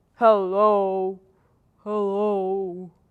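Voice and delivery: deepest possible, very low, drawn-out hello. Leading a group warm-up, saying hello as low as possible; very low-pitched hello. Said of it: "Let's say hello as low as we can".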